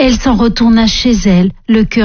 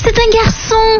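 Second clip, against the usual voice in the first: very high-pitched, excited exclaiming; 13 semitones higher than usual. One of the servants crowding around to see the baby, exclaiming. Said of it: "s'exclama l'une d'elles".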